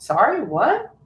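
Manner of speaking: passable put-on American accent. A british speaker retells answering people who ask if they're really british, in a passable american accent. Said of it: "do a passable American accent".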